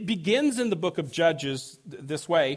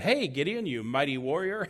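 put-on sarcastic tone, quieter; 2 semitones lower, 4 dB quieter than usual. Retelling God greeting fearful Gideon: imitating a sarcastic greeting. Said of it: "almost sarcastically, God shows up and said".

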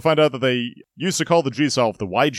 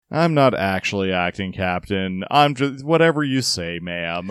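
very bored, low, noncommittal voice; 4 semitones lower than usual. Speaker imitates the noncommittal captain of the ship, mock-bored.

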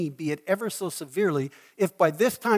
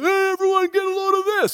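very high, raised, loud calling voice; 6 dB louder than usual. Retelling how a man suddenly called out to everyone: raised, loud voice. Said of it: "he raises his voice like this and goes".

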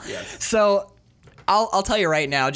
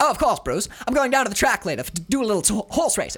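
put-on half-American, half-British transatlantic accent, pitched up; 5 semitones higher than usual. Asked whether Bob has a transatlantic accent, the speaker riffs in a transatlantic accent. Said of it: "Does Bob have a transatlantic accent?".

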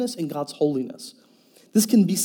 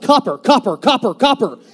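blurted, repeated yelling, over and over; 6 semitones higher, 9 dB louder than usual. Driving past a police officer, imitating the wife yelling out. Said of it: "she yells out".

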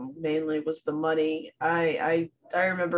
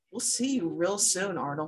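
put-on soft, sly, knowing tone; 2 semitones higher, 5 dB quieter than usual. Retelling how a woman on a bus spoke to a boy, imitating a sly knowing voice. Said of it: "sly little like I know something you don't know kind of smile".

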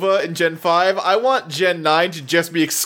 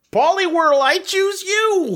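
put-on cartoon gym coach voice, very high; 13 semitones higher than usual. In a Pokémon game bit, calling out a Pokémon as a Coach Z impression. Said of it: "I just tried to do Coach Z from Homestar Runner".

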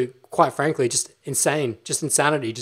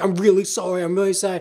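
acted apologetic delivery; 4 semitones higher than usual. Retelling how she apologized to the mom for the speaker, imitating someone apologizing. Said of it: "She's like apologizing to the mom".

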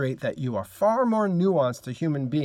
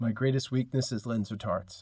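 flat, dry deadpan, much quieter; 4 semitones lower, 6 dB quieter than usual. Giving an example answer to the interview weakness question, deadpan. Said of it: "I deadpan something like".

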